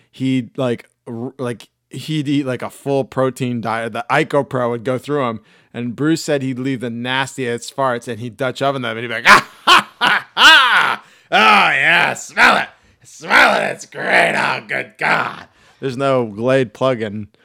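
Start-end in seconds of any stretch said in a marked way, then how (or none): 9.2-15.4 slow, rough-edged, drawn-out drawl. Retelling how a wrestling boss gloated over his farts: Vince McMahon impression. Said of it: "speaking of my Vince impression".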